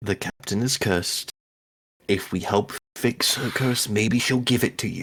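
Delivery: speaking very quietly. A player sends a message into Aridia's head, speaking very quietly. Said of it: "I'm saying this very quietly".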